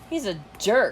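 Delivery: plain reading voice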